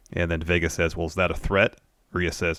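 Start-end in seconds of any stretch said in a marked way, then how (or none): none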